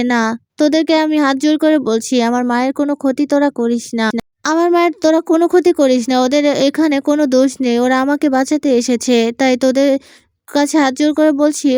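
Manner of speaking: ordinary delivery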